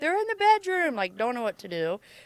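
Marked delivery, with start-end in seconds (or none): 0.0-0.9 high, loud, terrified screaming and crying. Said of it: "I'm, like, screaming and crying".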